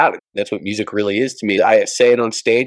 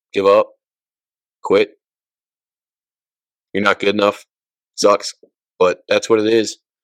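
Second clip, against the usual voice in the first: choked-up, emotional voice. Answering a question that moved them, choked up. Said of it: "You choked me up".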